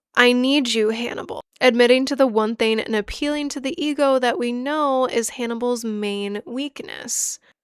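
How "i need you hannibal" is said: ordinary talk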